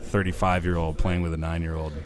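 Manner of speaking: ordinary talk, nothing marked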